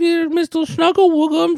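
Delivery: put-on very high cooing baby talk. Retelling how she spoke to the cat, in baby talk to a cat. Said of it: "She was baby talking the cat".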